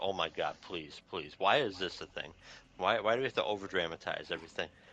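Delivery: ordinary talk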